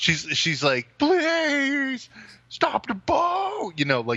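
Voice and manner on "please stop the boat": terrified yell, very high, very slow, drawn out. Retelling a terrified teenage water skier in a movie scene: imitating a girl yelling. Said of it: "like, yelling".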